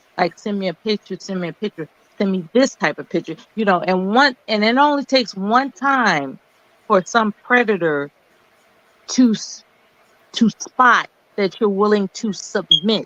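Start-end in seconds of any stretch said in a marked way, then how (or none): 12.3-13.0 emphasizing the word submit. Warning about predators and picture requests, stressing the word submit. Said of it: "Emphasis on the word submit".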